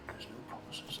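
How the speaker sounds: very quiet stage whisper. Whispering a parting line in character to John Jack. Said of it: "I literally just whisper to him".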